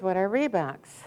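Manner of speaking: ordinary talk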